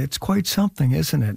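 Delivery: very quiet, hushed speech. Recalling a friend of Will's watching Will make the crew laugh, imitating a very quiet remark. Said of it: "Chris Parnell just said very quietly".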